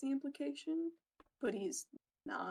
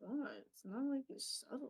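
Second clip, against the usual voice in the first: muttered under the breath; 2 semitones higher, 4 dB quieter than usual. After being thwacked with a wooden yo-yo, a character mutters under his breath. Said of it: "he's like under his breath".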